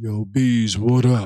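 very low, slow, drawn-out woman's voice. Imitating a woman with a wild deep voice greeting someone: imitating a deep-voiced woman. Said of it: "a chick talking about".

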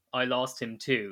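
usual speaking voice

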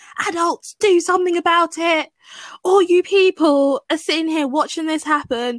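very high-pitched yell. Recounting a man in a park calling out idle onlookers, retelling a shout. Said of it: "just shouting like".

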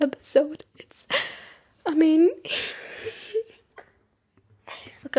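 words broken up by laughing throughout. Resuming the episode after an interruption, laughing while talking. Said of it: "I'm gonna stop laughing".

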